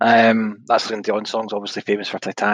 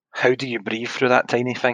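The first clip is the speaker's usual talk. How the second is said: ordinary talk, nothing marked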